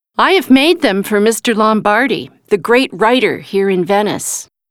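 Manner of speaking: ordinary delivery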